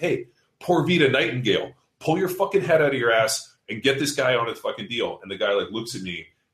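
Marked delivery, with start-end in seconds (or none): 0.0-5.2 put-on yelling, higher pitch. Retelling yelling at a man who should be coaching his athlete, retelling a yell. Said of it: "And I was like".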